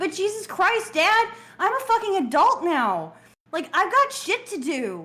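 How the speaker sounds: temper tantrum. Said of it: "Are you finished throwing a temper tantrum now?".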